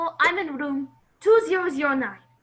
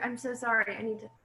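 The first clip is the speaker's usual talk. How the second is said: ordinary talk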